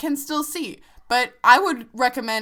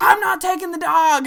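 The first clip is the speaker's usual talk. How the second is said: loud, high-pitched, yelled put-on Irish accent; 6 semitones higher, 5 dB louder than usual. Retelling what an Uber driver said to them, imitating an Irish accent. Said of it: "This very like Irish guy was like".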